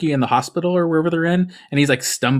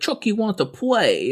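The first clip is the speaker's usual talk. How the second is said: put-on babyish voice, high and slow; 6 semitones higher than usual. Retelling a movie scene where the kid talks: imitating baby talk. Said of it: "he talks like a baby".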